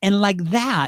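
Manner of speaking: normal talking voice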